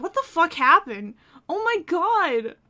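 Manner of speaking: put-on shocked voice. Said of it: "she's gonna be like".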